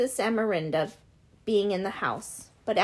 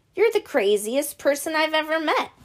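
amused, incredulous laugh-talk, pitched up; 6 semitones higher, 4 dB louder than usual. Narrator reading a man's reply to the narrator's story of being cut, laughing incredulously. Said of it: "Rodden laughed and shook his head incredulously".

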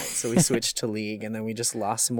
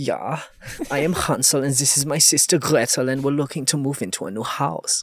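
put-on German accent; 3 semitones higher, 4 dB louder than usual. Showing the German accent practised for a role-play story, in a German accent as Hansel. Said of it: "practice my German accent".

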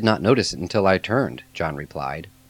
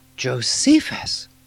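high, surprised, awed and reverent exclamation; 5 semitones higher than usual. John learns who rescued them and exclaims in surprise and reverence. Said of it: "John exclaimed in a tone of surprise and reverence".

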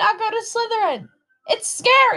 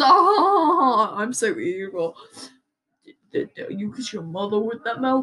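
put-on hard tough-talk voice with drawn-out oh; 8 semitones lower than usual. Showing off a voice right after announcing it, tough voice. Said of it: "This is my tough voice".

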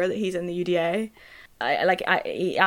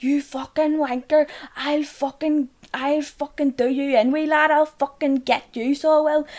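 mock angry, high, drawn-out furious screaming rant; 8 semitones higher than usual. Speaker retells a man screaming at another man during a fuss, retelling someone screaming. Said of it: "He was screaming at him".

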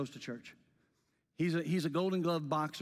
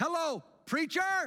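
put-on shrill, very high, very loud shout; 12 semitones higher than usual. Retelling how the guy at the front greeted him on arrival, retelling a very loud call. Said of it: "said rather interestingly and very loudly".

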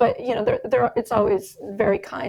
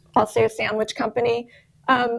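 usual speaking voice

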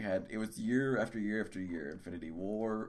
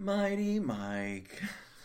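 mopey, very high, word stretched long; 10 semitones higher, 3 dB louder than usual. Co-host greeted on a comic podcast episode, a little depressed. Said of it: "you sound a little depressed there".

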